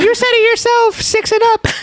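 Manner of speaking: very high, squeaky, whiny voice.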